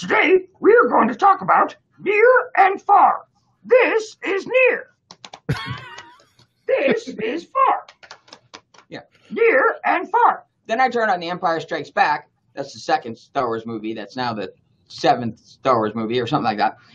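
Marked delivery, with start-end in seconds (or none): 0.0-10.4 very high, swooping, slow, sing-song puppet voice. Retelling watching Sesame Street at home, quoting Grover in a Grover voice. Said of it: "there's Grover going".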